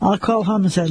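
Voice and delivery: ordinary delivery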